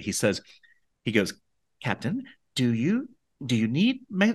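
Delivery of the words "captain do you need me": mock-meek stuttering, much higher. Recounting a character's first line to the captain, imitating a meek stutter. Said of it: "He paused, like he stuttered".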